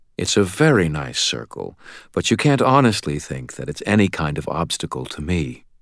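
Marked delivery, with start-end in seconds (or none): none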